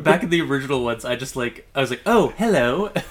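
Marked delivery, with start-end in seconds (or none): 2.0-2.9 high, loud, affected put-on British accent. Recalling how she talked in the original ones, mock British accent. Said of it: "tried to, like, mock, oh, like, British accents".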